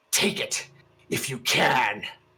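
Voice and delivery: fierce, ferocious beast voice. The narrator voices her after she transforms and roars, in a fierce voice. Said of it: "she just says in a fierce voice".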